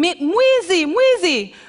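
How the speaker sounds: very high, shrill, instinctive screaming cry. Retelling being robbed of a bike, imitating own screaming. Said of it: "I start screaming".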